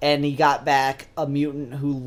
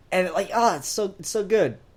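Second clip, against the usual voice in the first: normal talking voice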